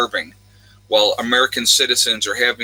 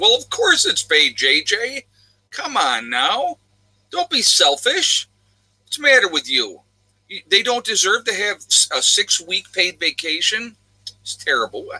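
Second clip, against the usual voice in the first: put-on sarcastic, mock outraged tone, higher pitched; 8 semitones higher than usual. Answering J J's remark about paid vacation: put-on sarcastic scolding. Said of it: "I'm being absolutely sarcastic".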